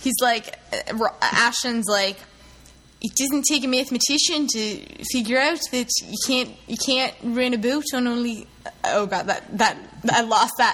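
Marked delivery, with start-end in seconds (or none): 3.0-8.5 put-on South African accent. Retelling a remark by [name]: [name]'s South African accent. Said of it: "my South African accent".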